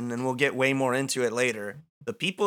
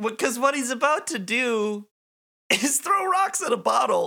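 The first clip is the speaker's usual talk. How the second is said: voice cracking and giving out, going higher; 10 semitones higher than usual. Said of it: "did you hear that? My voice is gone".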